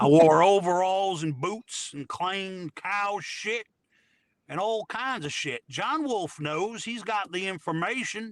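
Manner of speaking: put-on Georgia accent. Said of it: "growing up as a child in Georgia".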